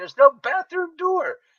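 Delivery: very high, loud yell. Retelling own reply to the yelling man: imitating own past yelling. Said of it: "me and this guy are yelling at each other".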